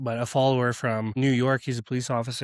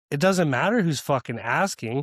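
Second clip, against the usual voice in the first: ordinary delivery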